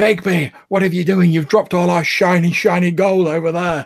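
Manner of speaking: calling out loudly. Turning around in the game to call out to another character, in a loud voice. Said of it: "in like quite a loud voice".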